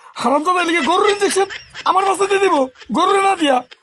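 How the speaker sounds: high outraged scolding yell broken up by laughter.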